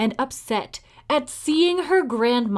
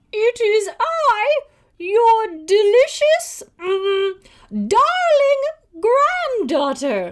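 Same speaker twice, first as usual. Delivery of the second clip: very high, slow, fake put-on voice; 10 semitones higher, 6 dB louder than usual. Narrator reading the wolf answering Granny at her door, in a high put-on voice. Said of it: "said the wolf in a high voice".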